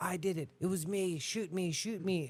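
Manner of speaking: acted frantic, urgent, blurted-out yelling. Recounting a man shouting out from the audience, retelling a man's yelling. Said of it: "he started yelling out in the audience".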